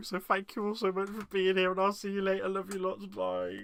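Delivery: voice on edge of crying. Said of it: "before I cry".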